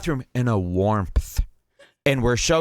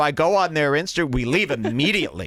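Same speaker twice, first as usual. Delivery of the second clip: ordinary talk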